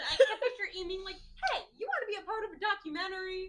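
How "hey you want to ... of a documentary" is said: highly animated, lively, swooping voice. Picturing how Amy asked him, the speaker is imitating Amy, really animated. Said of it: "Like a really animated voice".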